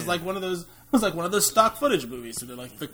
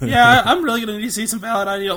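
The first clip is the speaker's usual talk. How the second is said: ordinary talk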